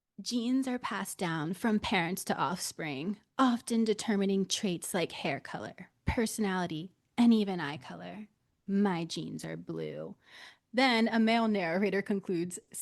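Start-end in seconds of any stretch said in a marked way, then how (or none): 0.2-10.2 put-on breathy seductive voice. Reading out an ad's lines, imitating Sydney Sweeney's put-on sexy voice. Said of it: "she's obviously trying to sound sexy".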